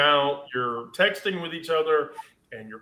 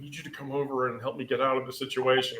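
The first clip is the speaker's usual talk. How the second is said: put-on very low voice, quieter; 2 semitones lower, 7 dB quieter than usual. Retelling a friend's phone call from her bathroom: imitating someone talking really low. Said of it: "she's talking really low".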